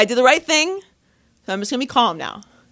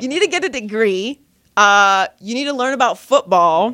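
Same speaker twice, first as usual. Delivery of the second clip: plain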